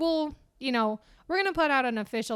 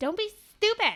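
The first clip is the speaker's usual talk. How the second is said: very high-pitched character voice; 10 semitones higher than usual. Telling the others not to tell her: HRH impression. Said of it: "that was my H R H impression".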